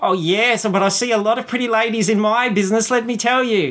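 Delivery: flamboyant, chirpy voice. In a tabletop game, a half-elf bard compliments Ernestine, flamboyant, chirpy voice. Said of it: "And [name] comes in and he's a half elf and he's very flamboyant and chirpy and he's got long golden hair / And [name] comes in and he's a half elf and he's very flamboyant and chirpy and he's got lon".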